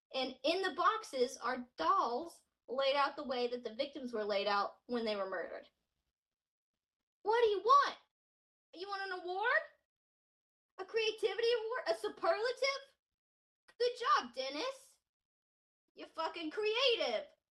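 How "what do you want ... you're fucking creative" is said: high, mocking, sarcastic shouting. Addressing the killer Dennis while telling the case, yelling sarcastically. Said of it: "Can you tell I'm yelling?".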